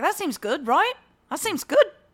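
put-on Australian accent. Retelling a friend's comments while they explained a football game to him: Australian accent. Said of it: "our mutual friend who's Australian".

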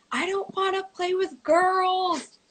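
put-on very high, crying scream with drawn-out "girls". Retelling running off the field to their parents as a child, retelling a scream. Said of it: "like screaming".

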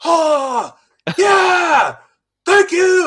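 shrill, very slow, drawn-out, full-volume scream. Retelling voicing a military dude in the sound booth: reenacting own full-volume scream. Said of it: "screaming, like, literally as loud as I possibly can get".

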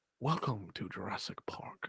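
soft, breathy, almost whispered character voice. Asking for a Jurassic Park clip, the speaker does a John Hammond impression. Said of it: "trying to do my best Ian Hammond impression".

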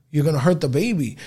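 ordinary delivery

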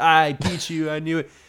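high, teasing, gloating, rubbing-it-in tone. Retelling a woman rubbing her better score in someone's face: imitating gloating. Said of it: "I think she's rubbing it in Cody's face".

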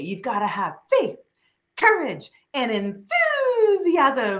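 goofy, excited, silly, sing-song, drawn-out voice. Retelling how mom repeated a movie line: imitating mom's silly voice. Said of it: "she would say it in such a silly voice".

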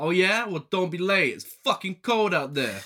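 put-on mild New Jersey accent. Retelling a film character's phone call in a put-on slightly New Jersey accent. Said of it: "What accent are you?".

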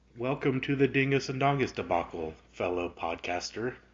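very monotone voice. Podcast host welcomes a fellow podcaster to the episode, in a very monotone voice. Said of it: "a very monotone voice".

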